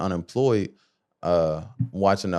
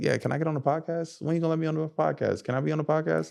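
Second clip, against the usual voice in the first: put-on very high, playful teasing voice, said repeatedly; 9 semitones higher, 4 dB quieter than usual. Retelling women friends asking to get on the podcast: imitating friends asking jokingly.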